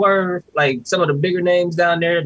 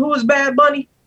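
mock, high, clueless-sounding American voice. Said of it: "these crazy Americans been over here talking about some".

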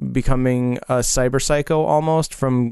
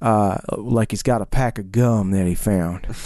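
rural backwoods hillbilly voice; 4 semitones lower than usual. Describing a game's driver character and showing how he talks: hillbilly voice. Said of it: "He kind of talks like this".

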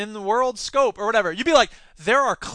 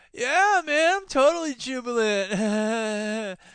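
very slow, spaced-out, jubilant stretched stoner drawl; 2 semitones higher than usual. Answering as a burnout hippie dork: put-on stoned voice. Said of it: "You sound like you're, like, stoned".

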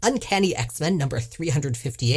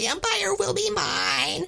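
very high, screechy parrot squawk. Asked whether Deathbird talks like a parrot, trying out her voice as a screechy parrot. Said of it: "like a Pollywanna cracker kind of like screechy voice".

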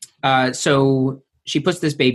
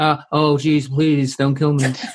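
mock pleading, imitated begging voice. Retelling a show scene where the nanny sees Villanelle; impression of the pleading nanny. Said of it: "Good impression".

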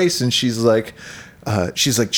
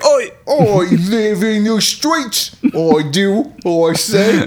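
put-on cockney accent, slow, drawn out, pitched up; 8 semitones higher, 3 dB louder than usual. Describing a woman in something the other speaker might watch: mock cockney accent. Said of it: "she's cockney".

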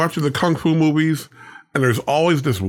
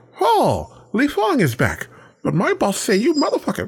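put-on dubbed effeminate voice, higher; 9 semitones higher than usual. Retelling a dubbed kung fu movie troublemaker: imitating a dubbed feminine voice. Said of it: "And the little guy walks in".

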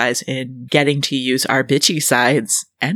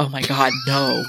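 frightened, dreading, fearful tone; 3 dB quieter than usual. Reacting to a joking plan for the next album, fearful voice. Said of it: "the sound of fear in your voice".

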